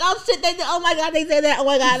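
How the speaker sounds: very high, loud, squealing exclamations in Trinidadian accent.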